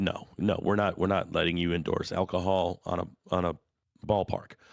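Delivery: ordinary talk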